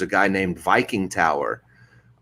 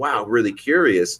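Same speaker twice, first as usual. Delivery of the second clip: normal talking voice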